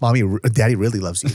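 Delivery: ordinary talk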